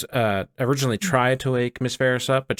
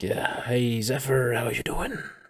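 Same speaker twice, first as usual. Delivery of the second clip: little, small voice, quieter; 4 dB quieter than usual. Narrator voices the warlock patron greeting zephyr over his shoulder: little voice. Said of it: "you hear a little voice kind of over your shoulder".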